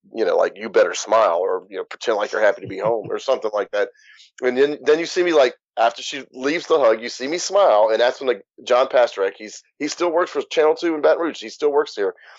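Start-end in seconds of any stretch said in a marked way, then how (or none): 0.6-3.1 put-on whispering. Retelling what a mother whispered during a hug: imitating mother whispering. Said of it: "she whispers in my ear".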